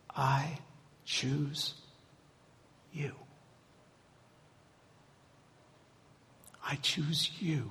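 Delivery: very quiet, slow, very soft hushed whisper. Speaker voicing god's words to listeners, whispering. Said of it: "And he whispers".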